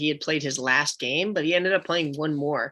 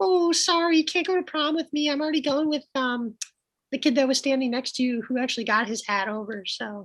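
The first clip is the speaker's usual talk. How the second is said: very high, falsetto put-on girl voice; 10 semitones higher than usual. Acting out a girl turning down a boy's prom invite: put-on girl voice. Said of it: "How do you like my girl voice?".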